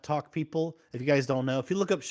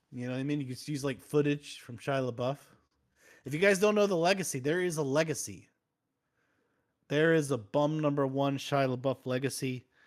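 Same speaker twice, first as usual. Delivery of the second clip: ordinary talk, nothing marked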